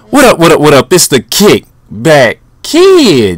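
yelling. Host opening a video with his greeting: yelling into the mic. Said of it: "I'm yelling in the mic".

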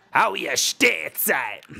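terrible, slow, creaky, loud, rough villain voice. Practicing an impression of a wannabe gangster greeting his henchman Stateside: terrible impression of the Viper. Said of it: "terrible impressions of the Viper".

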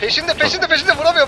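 high, loud, frantic alarmed voice.

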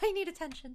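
high, fast, little put-on cat voice.

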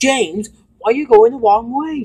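irritated, very high voice. Narrating Gina calling out to James, read crossly. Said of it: "She said crossly".

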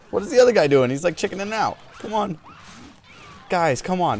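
high, loud, exasperated yelling.

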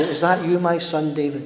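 mock, falsely contrite, fake repentant calling out. Retelling Saul shouting out to David: imitating fake repentance. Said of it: "In this sort of fake repentance way".

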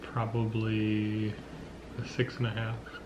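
hushed, soft, teasing murmur.

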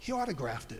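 the calmest possible, very calm, level voice. Retelling what he said after looking under the poncho, retelling a very calm remark. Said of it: "in the most calmest voice".

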